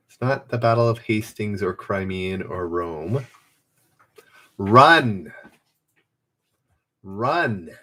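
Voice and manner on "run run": each "run" punched with stress. Giving players a hint to a quiz answer: stress on RUN. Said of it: "The emphasis is on the word run".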